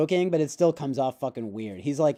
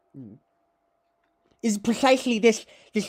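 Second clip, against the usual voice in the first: slow, drawn-out, particular mannered voice; 4 semitones higher than usual. Imitating how he often says things like this, impression of his way of talking. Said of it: "But he's like".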